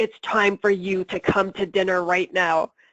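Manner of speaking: tense, harsh voice with a rough edge. Speaker demonstrates how an adult tells kids to come to dinner, with a rough-edged voice. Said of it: "you can hear that rough edge to my voice".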